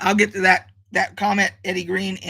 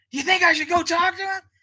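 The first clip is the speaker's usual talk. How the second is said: mock loud whisper, much higher pitch; 12 semitones higher than usual. Retelling a bar story, speaker imitates Chris's loud whisper. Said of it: "acting like he's whispering and he's talking loud".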